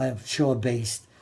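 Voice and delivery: ordinary talk, nothing marked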